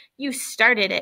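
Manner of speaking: ordinary delivery, nothing marked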